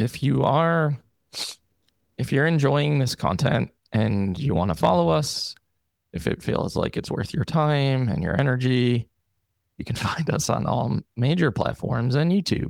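gloomy, defeated put-on depressed voice. Asked to repeat the sign-off, the speaker does it in a put-on depressed voice. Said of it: "can you just say what you said in like in your depressed voice".

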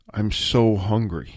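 trembling voice. A man in distress answers the narrator's question if he is okay, shaky voice. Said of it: "he looked at me in a shaky voice".

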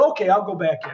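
ordinary delivery

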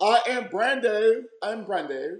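very high, slow, fake put-on British accent. Introducing himself while joking he isn't from Britain: fake British accent. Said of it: "but it's my accent".

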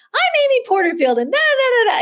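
very high, sing-song, swooping presenter voice. Imitating her early videos when she first started: imitating a really high voice. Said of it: "her voice would be really high".

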